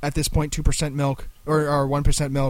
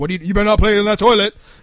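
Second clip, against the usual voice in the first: very loud, stern dad voice; 6 semitones higher, 9 dB louder than usual. Discussing what a father's first response is, doing the dad voice. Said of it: "the first response is the dad voice".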